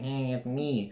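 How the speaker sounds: put-on whiny voice. Imagining how a wrestler would sound in his promo: imitating a whiny voice. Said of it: "whiny voice saying".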